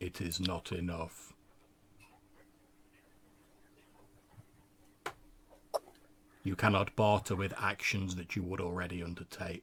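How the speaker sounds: divine, weighty pronouncing voice. Narrating the scene, a voice answers inside your head: booming voice. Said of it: "you hear this like booming voice say".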